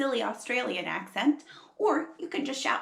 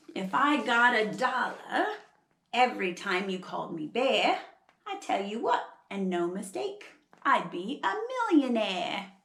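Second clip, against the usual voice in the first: earnest attempt at an Australian accent. Host teaching about koalas tries to speak in an Australian accent. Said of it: "trying really hard to do an Australian accent".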